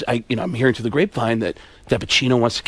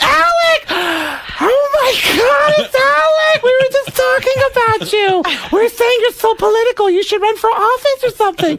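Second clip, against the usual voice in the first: very high, clueless, excited and eager voice; 3 dB louder than usual. Retelling the elevator scene, doing Beverly D'Angelo. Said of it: "He did Beverly D'Angelo".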